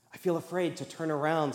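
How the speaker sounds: ordinary delivery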